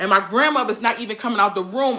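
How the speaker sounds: usual speaking voice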